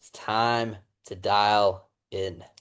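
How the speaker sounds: most serious, dead-serious tone. Showing someone how to say a line to the camera, in the most serious tone ever. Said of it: "say in the most serious tone ever".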